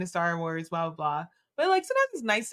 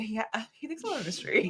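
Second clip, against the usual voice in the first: put-on thrilled, delighted, enthused excited tone; 2 semitones higher than usual. Acting out own imagined reaction to being called mysterious: imitating an enthused reaction. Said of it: "I'd be enthused by that".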